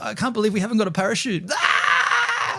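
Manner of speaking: slow, high, drawn-out panicked shrieking scream. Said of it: "she's screaming is like a".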